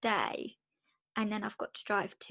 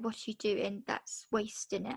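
ordinary talk

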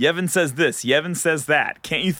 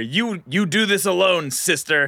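put-on very slow, drawn-out holler; 3 semitones higher than usual. Retelling a game scene where a character yells back: imitating a yell. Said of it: "he yells back at her".

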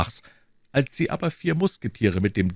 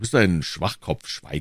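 usual speaking voice

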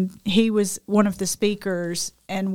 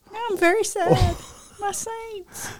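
very high voice on the verge of tears; 12 semitones higher than usual. Talking about a beloved player of the speaker's team: about to cry. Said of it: "So you're about to cry".

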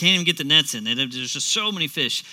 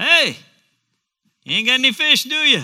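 mock, mildly sarcastic, very high-pitched and loud; 9 semitones higher, 6 dB louder than usual. Explaining a question to fishermen after a night's work, retelling a kind-of-sarcastic question. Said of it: "It's kind of sarcastic".

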